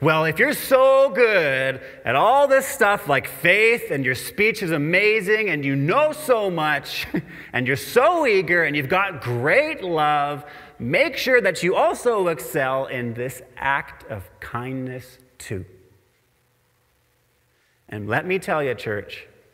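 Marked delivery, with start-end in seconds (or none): 0.0-15.6 play-acted, lightly sarcastic, needling, swooping sing-song tone. Rereading a Bible verse as if Paul wrote it: sarcastic Paul. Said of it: "Paul actually being a little bit sarcastic".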